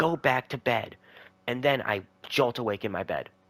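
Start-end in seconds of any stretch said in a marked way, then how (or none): 0.0-1.0 loud, screamed, shouted delivery. Retelling a nightmare figure pushing him to bed: imitating someone screaming. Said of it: "And then he's screaming it".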